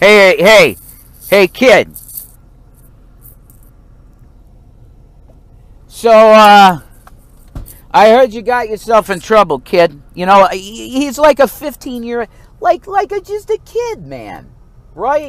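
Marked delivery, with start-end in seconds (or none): 0.0-10.0 very loud New York street-cop hollering. The speaker pretends to be a cop talking to a kid: cop voice. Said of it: "like a cop with a cop car right now".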